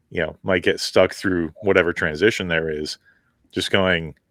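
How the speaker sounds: ordinary talk, nothing marked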